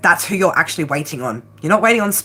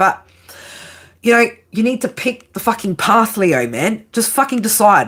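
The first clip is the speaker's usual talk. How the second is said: frustrated, exasperated, fed up, driving it home; 3 semitones higher than usual. Speaker addresses Leo directly, getting frustrated now. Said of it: "because I'm getting frustrated now".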